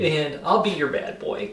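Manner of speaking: usual speaking voice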